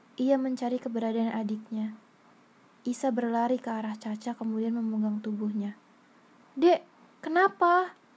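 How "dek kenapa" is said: alarmed, frantic, high, raised voice. Isa reaching younger sibling Caca after hearing a scream, speaking in panic. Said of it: "ucap Isa panik".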